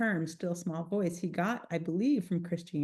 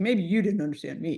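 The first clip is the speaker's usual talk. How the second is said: put-on cocky tone, louder; 5 dB louder than usual. Retelling own past words to God: imitating own cocky tone. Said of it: "this is cocky".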